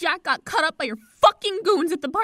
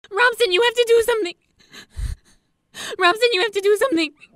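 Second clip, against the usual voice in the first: panicked, frantic, high, rushed, tumbling out too fast; 5 semitones higher than usual. [name] calls her brother Rob, upset, frantic and talking too fast. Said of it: "Slow down, [name]".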